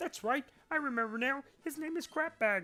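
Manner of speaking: cartoon frog puppet character voice. Reading a Pokemon game's dialogue aloud, in a Kermit the Frog voice. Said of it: "I don't know what's happening with this voice".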